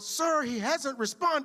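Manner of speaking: put-on, very high shouted voice. Retelling what she yelled back to him in class, retelling a yell. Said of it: "She yelled".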